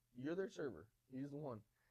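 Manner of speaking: normal talking voice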